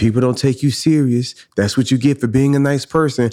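put-on whispering voice. Acting out the enemy whispering doubts to her: imitating the enemy whispering. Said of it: "here come the enemy whispering to her".

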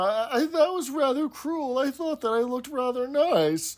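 imitated tearful mumbling. Speaker quotes what she said, imitating a half-crying mumble. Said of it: "in her half crying, half mumbling".

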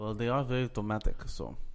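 put-on French accent. Mocking a musical about french people to the other speaker, bad french accent. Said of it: "I do accents".

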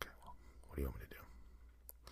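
soft, exasperated whisper under the breath.

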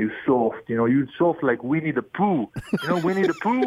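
put-on Italian accent on English words, high. Retelling how the head coach scolded young players: Ettore Messina's Italian accent. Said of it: "in his Italian accent".

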